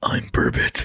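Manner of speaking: gruff, put-on caped superhero voice. Imagining a nocturnal burbot fish speaking, Batman voice. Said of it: "doing his Batman voice".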